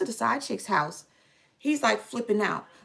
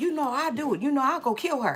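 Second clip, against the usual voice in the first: put-on frantic, flipping-out voice; 3 semitones higher than usual. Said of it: "flipping out".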